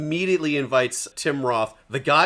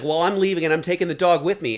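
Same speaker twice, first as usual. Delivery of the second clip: ordinary talk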